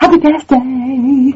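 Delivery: quiet, hushed voice. Guest joining by Skype in the middle of the night, speaking quietly. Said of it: "I have to speak quietly because it's the middle of the night".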